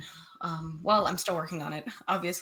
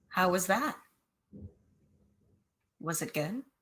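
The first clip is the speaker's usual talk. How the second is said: soft, quiet whisper. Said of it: "whisper a little bit to the air".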